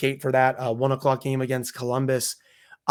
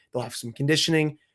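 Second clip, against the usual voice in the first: ordinary delivery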